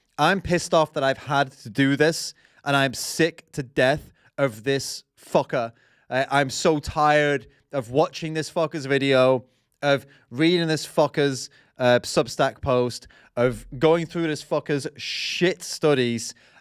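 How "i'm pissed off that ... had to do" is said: ordinary delivery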